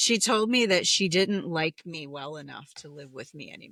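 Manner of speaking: ordinary talk, nothing marked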